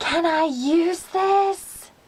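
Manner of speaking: very slow, carrying stage whisper. Retelling how a classmate asked to borrow a sharpener: imitating a loud whisper. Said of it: "you can hear him loudly whisper".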